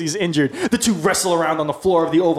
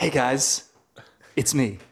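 slow, deliberate, drawn-out hello, like a star; 3 semitones lower, 5 dB quieter than usual. Arriving as a surprise guest for a game round: Tom Cruise impression. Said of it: "Tom Cruise".

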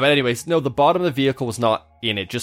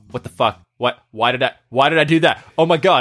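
put-on panicked voice; 4 dB louder than usual. Retelling how the driver reacted after hitting wet concrete: imitating someone panicking. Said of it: "He's panicking".

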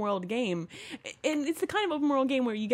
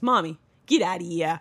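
put-on Long Island accent; 6 semitones lower, 5 dB louder than usual. Retelling how someone copied a phrase from a game video, in a Long Island accent. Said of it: "With the accent".

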